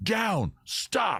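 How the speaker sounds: shouting. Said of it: "you yell".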